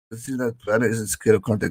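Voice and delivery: normal talking voice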